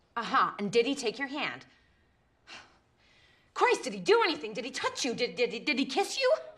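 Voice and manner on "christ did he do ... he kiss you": heated, insistent tone. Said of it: "Why are you getting so heated?".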